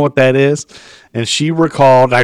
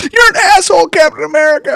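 put-on shrill, high, tearful child's crying outburst. Retelling how a boy of about eleven yelled at Captain America, imitating a boy crying. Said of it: "He was like crying".

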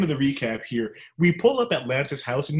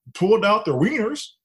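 put-on Texan accent, pitched high; 7 semitones higher, 3 dB louder than usual. Telling a story about a night out, in a put-on Texan accent. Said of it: "I'm gonna put on an accent here, so I apologize to everyone from Texas".

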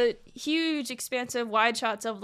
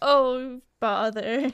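put-on donkey character voice. Joking that a sad character turns into Eeyore: Eeyore voice. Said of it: "He turns into Eeyore".

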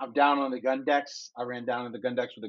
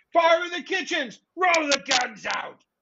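very high, drawn-out, top-of-the-lungs scream; 14 semitones higher than usual. Voicing a character warning the crew: screaming at the top of his lungs. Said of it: "He screams out at the top of his lungs".

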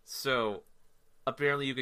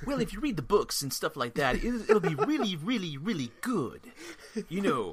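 nerdy, geeky voice, pitched higher; 8 semitones higher, 4 dB louder than usual. Retelling what a guy said, in the Jake voice. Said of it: "That's the new Jake voice".

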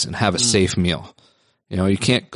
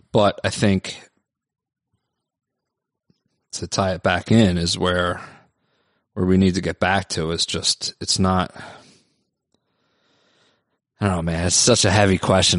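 trying not to get emotional, restrained. Answering a heavy question about politics, holding back emotion. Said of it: "I'm trying not to get emotional".

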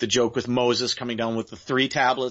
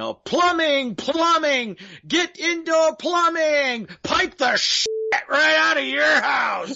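put-on very high, screamed cry; 4 dB louder than usual. Recalling favourite lines from a scene passing through Rome, imitating a guy screaming. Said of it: "you hear a guy screaming".

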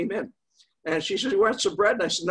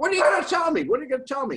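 play-acted high screaming, repeated; 7 semitones higher than usual. Retelling a man screaming at another man, re-enacting someone screaming. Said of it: "And he's screaming".

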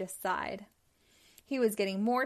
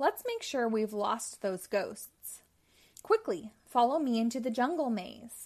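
ordinary delivery, nothing marked

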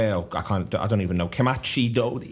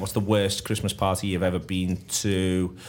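ordinary delivery

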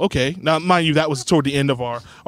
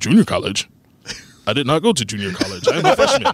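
mechanical, robotic, overly proper speech. Acting out a huge college freshman answering your question, in a robotic, very proper voice. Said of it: "they got this robotic".

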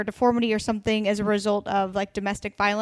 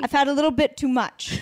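heavy put-on New Jersey accent on every word; 4 semitones higher than usual. Asked to say something in a Jersey accent, the speaker does a Caroline Manzo Jersey accent. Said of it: "I have to hear a Jersey accent".

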